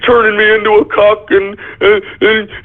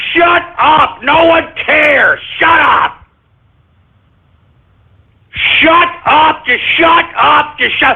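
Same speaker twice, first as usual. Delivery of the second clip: furious, angry ranting; 6 semitones higher than usual. Ranting at his listeners, angry tirade. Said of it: "I'm sorry I'm going off on this tirade".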